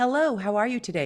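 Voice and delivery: ordinary talk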